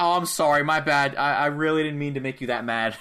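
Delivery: acted, sorry, sheepish tone. Acting out a wrestler apologizing to his opponent: imitating a sorry apology. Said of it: "he looks sorry about this".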